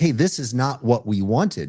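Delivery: ordinary talk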